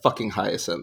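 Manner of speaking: hushed, breathy, whispered muttering under the breath. Retelling how someone reads a book: imitating Sarah whispering under her breath. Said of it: "keeps whispering under her breath".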